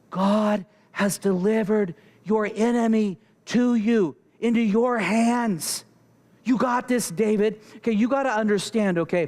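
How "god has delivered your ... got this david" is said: whispered, at a higher pitch. A speaker retells a companion urging the king he is with; retelling a whisper. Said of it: "he whispers to David".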